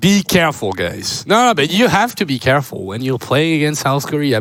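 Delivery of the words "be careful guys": low, cautioning tone. Quoting what Stats says to every team before playing them: imitating Stats' voice, smiling. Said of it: "if you say it with Stats' voice and with his smile".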